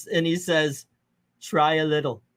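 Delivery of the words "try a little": put-on Indian accent, slower. Retelling what the guy said when he gave her chips, put-on indian accent. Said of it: "I'm doing an Indian accent for this".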